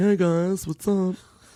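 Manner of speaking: campy robot voice, high and slow. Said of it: "I used to do this voice around the office".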